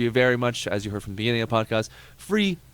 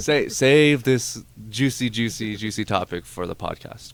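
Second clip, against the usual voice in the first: usual speaking voice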